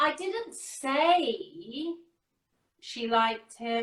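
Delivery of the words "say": strong stress on the word "say". Demonstrating how word stress changes meaning, stress on 'say'. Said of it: "I'll give a little bit of inflection as well".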